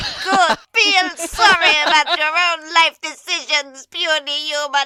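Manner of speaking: high, put-on talking-reindeer character voice. Voicing a reindeer asked if it can fly: reindeer character voice. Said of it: "I'm gonna regret this voice".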